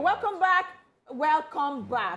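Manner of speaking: heavy weight on every word, punched, emphatic. Welcoming a returning guest to the show, with lots of emphasis. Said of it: "that's a lot of emphasis".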